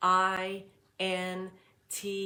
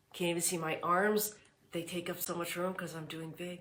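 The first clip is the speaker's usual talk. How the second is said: plain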